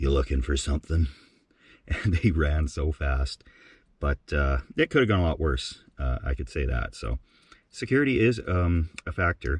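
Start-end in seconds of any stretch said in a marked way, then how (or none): 0.0-1.1 groggy, low, gravelly rasp of someone just woken. Retelling sitting up in bed to men at the back door, retelling a just-woken gravelly voice. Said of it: "just woken up gravelly voice".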